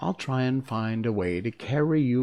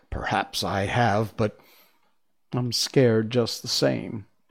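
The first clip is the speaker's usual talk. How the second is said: ordinary delivery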